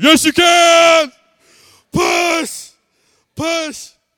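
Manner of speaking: very high, very slow, drawn-out scream. Recalling the birth of his baby, the speaker re-enacts screaming in the mother's ear. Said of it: "I'm screaming in her ear".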